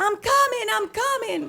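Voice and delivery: acted, very high-pitched, shrill, called-out yell. Retelling a distant woman calling out to them: imitating a woman yelling. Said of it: "starts yelling".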